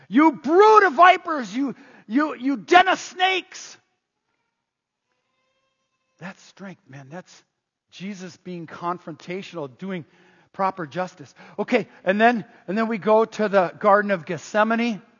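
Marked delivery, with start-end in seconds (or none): 0.1-3.8 high, really loud angry voice. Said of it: "hear the anger in his voice".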